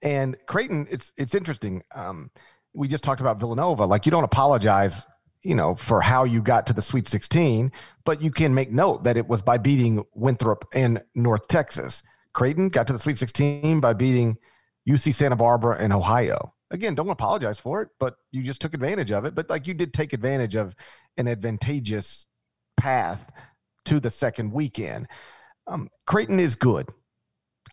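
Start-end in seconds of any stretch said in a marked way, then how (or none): 25.7-26.9 good lifted high and stressed. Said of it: "I emphasize the word good".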